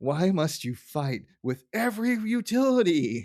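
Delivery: high, slow, distraught tone. Quoting Lisa after the phone is shut off: imitating distraught Lisa Simpson. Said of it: "Lisa is so distraught".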